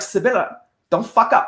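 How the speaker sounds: acted-out, half-joking but pointed cautionary tone. Quoting a gunnery sergeant's joking remark: imitating a warning tone. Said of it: "I can hear it in his voice".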